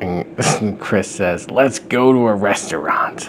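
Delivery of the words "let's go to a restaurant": put-on whispered, gruff baby voice. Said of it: "He sounds like Danny DeVito".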